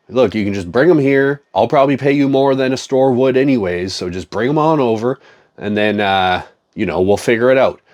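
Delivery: ordinary delivery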